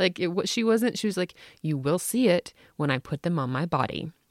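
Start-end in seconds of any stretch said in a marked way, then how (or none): 1.6-4.1 acted, plain, matter-of-fact delivery. Retelling a six-year-old's comeback: imitating a matter-of-fact tone. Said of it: "a matter of factly".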